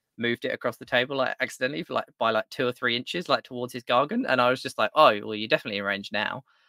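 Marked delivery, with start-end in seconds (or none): 5.0-6.4 acted sarcastic tone. Recounting a tabletop game, quoting their own line to an opponent: retelling own sarcastic remark. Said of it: "And just like sarcastically".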